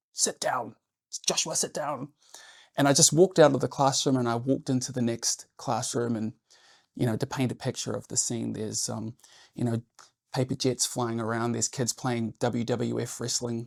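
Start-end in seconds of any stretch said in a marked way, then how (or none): 0.2-2.1 put-on scream, barked out, not at full volume. Recalling standing up in class, imitating someone screaming at him. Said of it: "I'm getting screamed at".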